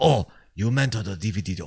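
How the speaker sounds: put-on Japanese accent with Japanese-accented cadence. Joking about how different speakers say a phrase, mock Japanese accent. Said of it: "very good Chinese and Japanese accents there".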